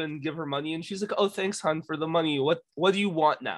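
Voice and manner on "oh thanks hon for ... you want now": mock rude in a joking, playful, funny way. Retelling how a Ren Faire woman answered kids who gave her money, mock-rude, funny. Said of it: "she was like rude in a funny way".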